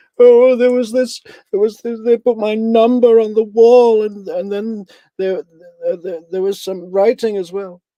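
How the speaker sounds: very high, very loud, frightened, stammering voice. Retelling what a woman told a detective, mock scared trauma voice. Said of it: "in this stupid, scared trauma voice".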